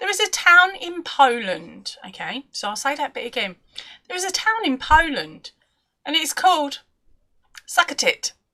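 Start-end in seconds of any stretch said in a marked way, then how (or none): 7.7-8.3 hurried, quick, rattled-off delivery. Naming a town in Poland to avoid trouble: quick 'Succotit'. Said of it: "I said it fast".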